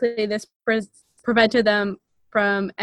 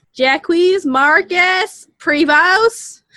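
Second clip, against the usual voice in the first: French name thickly Americanized, loud, high-pitched; 9 semitones higher, 8 dB louder than usual. Pronouncing the name jacques marcus prevost in a really american accent. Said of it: "I'm going to pronounce it really American".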